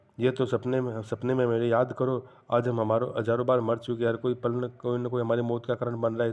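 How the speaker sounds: ordinary delivery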